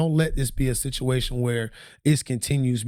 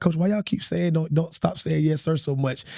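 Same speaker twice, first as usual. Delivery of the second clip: usual speaking voice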